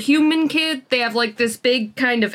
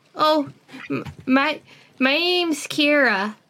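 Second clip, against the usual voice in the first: put-on child voice, much higher pitch; 4 semitones higher than usual. A player in a campaign answers another player asking their character's name, in a child voice. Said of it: "my child voice is pretty good".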